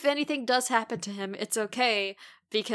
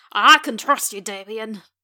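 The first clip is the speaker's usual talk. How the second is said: put-on wavering Scottish accent, louder; 8 dB louder than usual. Recounting Joe reassuring Damien about Fred, in a Joe voice veering into Scottish. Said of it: "That was veering into Scottish".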